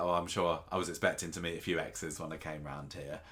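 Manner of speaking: ordinary talk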